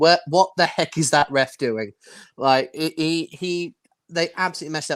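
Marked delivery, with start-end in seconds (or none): none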